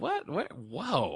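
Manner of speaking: put-on, high, stunned, baffled startled disbelief. Retelling own reaction to a surprising show scene: imitating own past surprised reaction. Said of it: "I was like".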